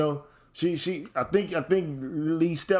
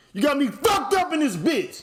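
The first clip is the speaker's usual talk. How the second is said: put-on very high voice, growing louder; 11 semitones higher, 4 dB louder than usual. Acting out a confrontation with a partner who comes in: getting loud. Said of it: "I get loud, stand up and shit".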